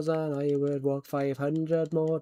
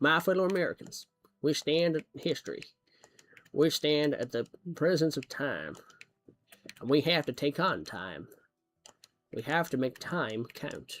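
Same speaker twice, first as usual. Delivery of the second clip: put-on Southern American accent. Speaker shows that they can do an American accent: put-on American accent. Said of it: "I can do a seven American accent".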